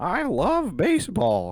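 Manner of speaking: put-on voice, high, swooping, bouncing up, sing-song. Doing the voice just named: baseball cap guy voice. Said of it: "baseball cap guy voice".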